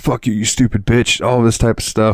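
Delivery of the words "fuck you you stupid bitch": put-on angry man's voice, heated, raging yelling. Retelling the neighbor's angry shouting: imitating an angry man yelling. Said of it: "getting madder and madder and yelling".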